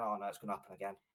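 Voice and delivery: nervous, anxious, dreading tone. Retelling how the fans and players reacted to the first Brighton goal: imitating anxious fans. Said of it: "the anxiousness that".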